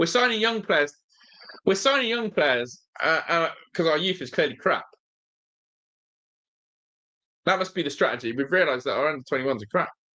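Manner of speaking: scoffing, mocking sarcastic tone. Reacting to the team signing young players while three one down: sarcastic. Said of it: "I'm being sarcastic".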